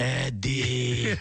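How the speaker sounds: put-on old horror-film vampire voice. Retelling calling Eddie on the phone: Bela Lugosi impression. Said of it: "be like".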